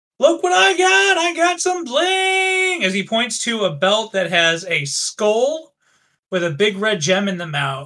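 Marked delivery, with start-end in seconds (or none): 0.2-2.8 very high call-out with "bling" drawn out. Theus walks in to his companions, pointing at his newly acquired belt: shouting out. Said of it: "point at it as he shouts out".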